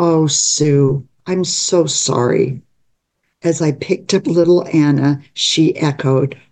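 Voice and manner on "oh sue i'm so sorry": ordinary talk, nothing marked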